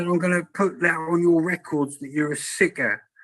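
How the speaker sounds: put-on, scolding, screaming outburst. Retelling how a dentist reacted during treatment: imitating someone screaming. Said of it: "she started screaming at me".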